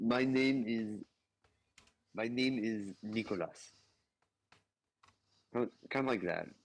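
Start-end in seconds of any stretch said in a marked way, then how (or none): 0.0-3.7 Cuban-accented English, spoken very slowly. Showing the other players how a Cuban accent sounds: Cuban accent. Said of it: "That's at least how my grandpa speaks".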